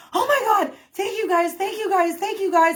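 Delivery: mock frantic, high-pitched, panicked voice. Retelling how two chased guys thanked their rescuers: imitating panicked thanks. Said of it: "they were, like, panicked".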